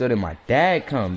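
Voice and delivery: ordinary delivery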